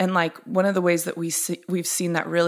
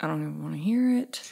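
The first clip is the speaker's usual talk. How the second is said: put-on mutter under breath, much quieter; 4 dB quieter than usual. Acting out what she said when he came home talking about a hard day, muttering under breath. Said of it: "like under my breath".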